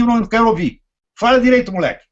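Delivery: confrontational, direct scolding tone. Showing how to answer a pompous speaker: confrontational scolding, finger in face. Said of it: "é assim que ele tem que falar, com o dedo na cara".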